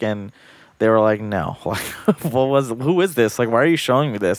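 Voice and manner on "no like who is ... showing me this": acted offended, dismissive, drawn-out "who". Retelling how people reacted when shown a video, imitating offended dismissal. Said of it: "They're actually a little bit offended".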